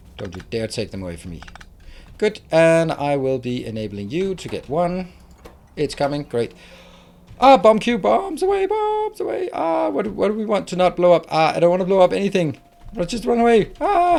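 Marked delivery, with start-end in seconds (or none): 7.4-14.2 panicky, pitched-up, all-over-the-place rambling chatter. Reacting to a bomb cube in the game: panicking. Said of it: "I'm panicking, as you can see".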